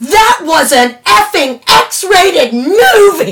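mock shrieked complaint, very high, very slow, drawn out. Retelling a line screamed after a movie: imitating a scream. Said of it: "screamed it".

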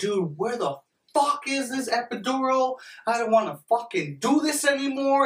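mock very high-pitched yelling. Retelling the girlfriend's complaint while waiting for the epidural: imitating girlfriend yelling. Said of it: "my girl's yelling at me".

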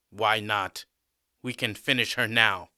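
ordinary delivery

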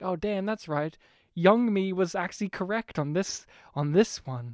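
normal talking voice

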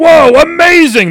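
yelling sports announcer voice, high and loud. Explaining a choice, imitating the NBA Jam announcer yelling. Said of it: "he's gonna be yelling like".

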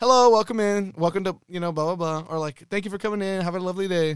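friendly, polite customer-service tone. Retelling greeting customers at work: retelling saying it nicely. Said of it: "obviously I have to say it nice".

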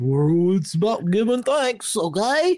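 high, snooty, uppity know-it-all voice. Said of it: "those uppity people who are like".

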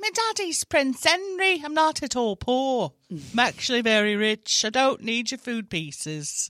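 put-on Scottish-ish accent. Improvising an orphan who learns his father is Prince Henry: almost-Scottish accent. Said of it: "that almost sounded Scottish".

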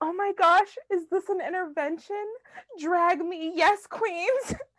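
over-the-top, high, loud gushing. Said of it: "She was like".

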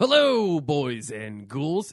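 deliberately jerky-sounding, swooping, drawn-out, obnoxious voice. Opening the podcast episode as the absent co-host: impression of Will. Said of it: "Was that a good impression?".

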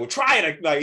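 loud, angry, irritated, fed-up voice. Retelling how a man reacted when his bent card would not swipe; imitating an angry man. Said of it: "He's mad".

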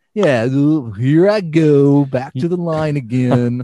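loud, very slow, droopy cartoon dog drawl. Imitating a player walking to the free-throw line: dopey dog impression. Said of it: "Trying to do my best dopey dog impression".

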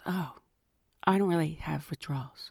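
low, soft, hushed, confiding half-whisper. Retelling a coworker's answer about smoking withdrawals: imitating someone kinda half-whispering. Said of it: "She's kinda whispering".

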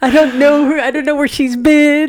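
very high squeaky voice. Teasing a friend about a story, imitating Chris. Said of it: "You're like".

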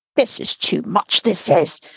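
stern, severe, disapproving, scolding tone. Reading a story aloud, the nurse's line on the baby: said severely. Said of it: "she said severely".

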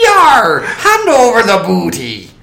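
very high, very loud, swooping Irish accent, pirate-tinged. Teaching an easy accent cheat, the speaker does an Irish accent via high pirate voice. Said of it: "That's an Irish accent".

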